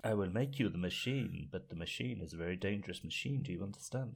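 put-on faint, slight, unplaceable European accent. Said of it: "stare and speak like [name] with a very slight accent".

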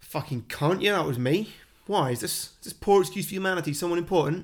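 put-on improvised Cockney accent. Retelling a man's reply when asked about a beating, in a Cockney accent. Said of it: "I've not prepared my Cockney accent".

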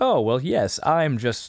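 posh upper-class toff voice, very slow. Retelling a movie scene, the speaker quotes a character's line in an upper-class voice. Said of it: "he was speaking like he was an upper class guy".

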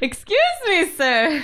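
very high, loud calling shout. Adventurer at the front door calling to a man across the room, shouting across the room. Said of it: "I'll just shout it".

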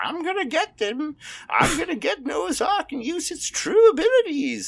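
put-on elderly man voice, very high and slow. Voicing a young villain in a made-up story: old man voice. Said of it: "I don't know why I'm making him sound like an old man".

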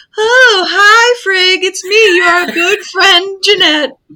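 very high, unconvincing fake woman's voice. Retelling a disguised trickster greeting Frigg: unconvincing put-on woman's voice. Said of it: "I can't even do a convincing woman".

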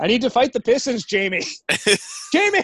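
very high-pitched, insistent, nagging voice. Acting out Zach's home life, imitating Zach. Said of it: "That's my impression of Zach's home life".

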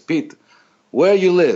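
put-on loud, high, choppy broken-English Italian accent. Retell a phone call, acting out the caller's question to you with Patsy's broken Italian accent, imitated. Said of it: "he has like this broken Italian accent".

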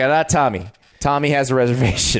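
ordinary talk, nothing marked

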